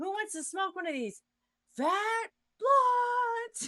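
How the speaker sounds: very high, stretched-out, drawn-out screaming. Retelling a show character's shout to the men: imitating Frida screaming. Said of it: "And she's screaming it".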